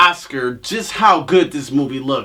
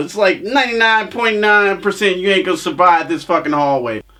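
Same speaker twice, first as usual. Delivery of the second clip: ordinary delivery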